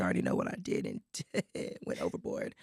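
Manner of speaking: low, fast, nearly gone hoarse voice. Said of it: "If my voice sounds like this".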